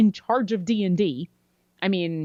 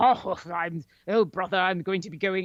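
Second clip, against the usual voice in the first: 1930s serial adventurer voice, put-on British accent. Describing how actors chose to play brothers, doing an old-school british adventurer voice. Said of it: "this very old school British adventurer".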